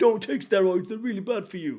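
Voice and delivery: fake elderly man voice. Imitating an anti-steroid hater's warning: old guy's voice. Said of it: "Was that an old guy's voice?".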